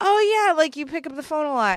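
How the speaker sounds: bright, mock-polite tone.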